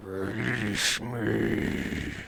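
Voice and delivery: soft, hissing, gravelly gargoyle-like creature voice. Voicing the creature as it hisses at the others, gravelly, hissing creature voice. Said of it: "with a gravelly voice, uh, it hisses at you".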